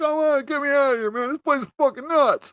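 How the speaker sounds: acted-out, tearful bawling and sobbing. Retelling a grown man's call home, imitating a man bawling. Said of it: "like bawling with his little blue flat jacket".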